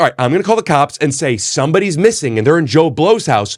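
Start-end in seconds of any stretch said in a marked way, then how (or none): none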